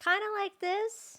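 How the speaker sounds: excited, very high-pitched tone. Speaker shows how their voice changes when really excited, really high excited voice. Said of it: "it gets like a really high".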